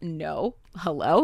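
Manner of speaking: startled, alarmed, freaked-out, panicked blurt. Retelling how a character freaks out when a boy walks in: imitating someone freaking out. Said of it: "Margot freaks out".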